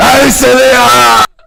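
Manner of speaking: very loud. Recording a requested shout-out line: very loud. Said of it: "Very loud".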